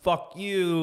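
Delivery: angry cursing. Retelling brake-checking another driver: imitating own angry driving. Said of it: "like this, angry driving".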